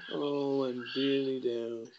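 hushed, very slow, very quiet mopey donkey voice. Describing how the donkey in Winnie the Pooh sounds: mock-gloomy donkey voice. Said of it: "He sounds like".

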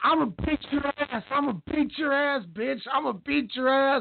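furious, threatening, high-pitched angry yelling. Recounting a ring scuffle where one boxer yells at another: imitating Claressa Shields yelling. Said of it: "yelling at Christina Hammer, like".

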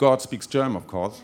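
normal talking voice

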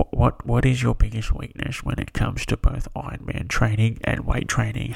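put-on, mock-serious voice. Reading another question aloud, in a serious question voice. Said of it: "I'll put my serious question voice on".

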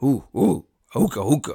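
put-on caveman voice. Saying they want to be speechless when someone walks in, in a caveman voice. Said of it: "I want to sound like a caveman".

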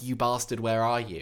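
usual speaking voice

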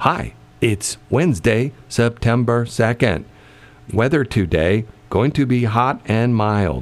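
automated, robotic machine announcement voice. Explaining the special code in the computer, imitating the computer voice. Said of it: "the computer voice will say".

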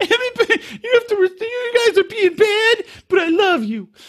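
crying, teary, very high voice. Imitating a crew member who cries while trying to be tough: imitating crying while scolding. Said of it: "Good impression".

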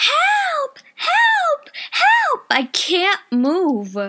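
restrained, very high, very slow, drawn-out held-back cry. Speaker reenacts calling for help without screaming into the mic: retold cry for help, not screamed. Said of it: "I am not going to scream in this mic".

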